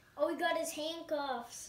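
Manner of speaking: ordinary talk, nothing marked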